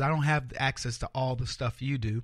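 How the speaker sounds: ordinary talk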